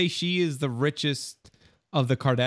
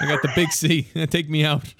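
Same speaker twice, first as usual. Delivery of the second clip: mocking tone with laughter breaking through the words. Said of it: "He's like".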